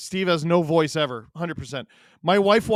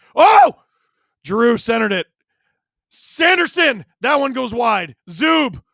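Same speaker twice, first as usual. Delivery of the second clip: high, loud, startled screaming; 6 semitones higher, 7 dB louder than usual. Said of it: "I'm sorry for screaming like that".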